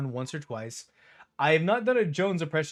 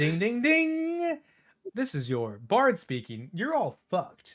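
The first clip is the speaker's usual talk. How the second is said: high PA announcer voice with drawn-out dings; 6 semitones higher than usual. Voicing the bard Arachne as if always on speaker, in Arachne's PA system voice. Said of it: "talking in a P A system voice".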